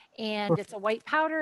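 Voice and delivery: ordinary talk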